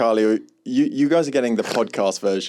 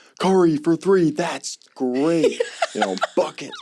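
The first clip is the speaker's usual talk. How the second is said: put-on American accent, sports-fan style, pitched up; 6 semitones higher than usual. Asked to show everybody an accent picked up from watching sports, a put-on american accent. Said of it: "can you do your American accent for everybody?".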